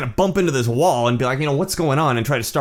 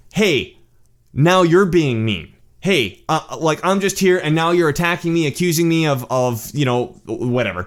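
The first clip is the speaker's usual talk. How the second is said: put-on pointed, passive-aggressive complaining tone; 2 semitones higher than usual. Retelling an argument, imitating the other man turning passive-aggressive. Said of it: "Became passive aggressive".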